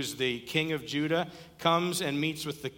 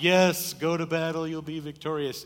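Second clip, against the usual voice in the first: loud, heavy, mocking sarcasm; 5 dB louder than usual. Retelling a man's reply to the king who summoned him, quoting it sarcastically. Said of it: "in a sarcastic tone".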